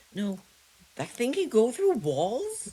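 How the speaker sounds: voice breaking, very high. Streamer reacts while playing a game, voice cracking. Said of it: "Apologize for the voice crack".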